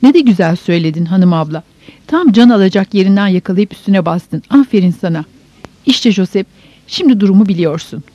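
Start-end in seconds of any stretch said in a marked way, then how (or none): none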